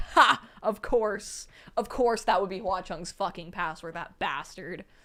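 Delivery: acted, wry, dismissive scoff without real laughter. Imitating a ghost king reacting to the password: imitating a scoffing, not genuine laugh. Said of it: "Not laughing, like, genuinely".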